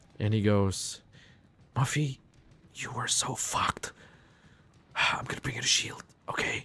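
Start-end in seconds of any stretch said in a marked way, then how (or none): 1.8-6.7 hushed whisper, close to the ear. Voicing an officer restraining Muffy who leans to her ear, whispering. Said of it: "He whispers uh, in your ear".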